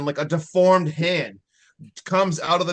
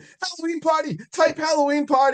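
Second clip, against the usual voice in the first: mock, very high, all-out screaming; 13 semitones higher than usual. Retelling a movie scene where a character is held down: imitating someone screaming. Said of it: "He is screaming".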